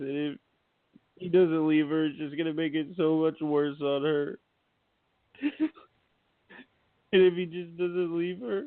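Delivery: tearful, weeping, crying while speaking. Giving advice about Matt to another speaker, crying while talking. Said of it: "you're crying again".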